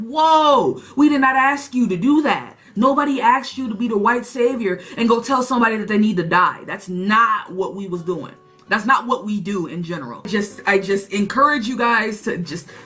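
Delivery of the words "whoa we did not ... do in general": ordinary talk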